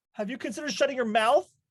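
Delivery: snippy, cutting tone. A woman with a headache snaps back at a lemonade seller: rude tone. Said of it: "you don't need to take that tone".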